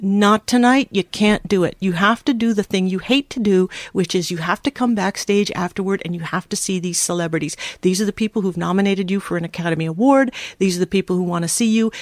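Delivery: ordinary delivery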